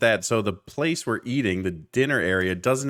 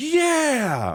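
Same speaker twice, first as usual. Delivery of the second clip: mock sudden shout, high and drawn out; 13 semitones higher than usual. Retelling how one guy reacted to a play: imitating a guy yelling. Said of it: "He just yells".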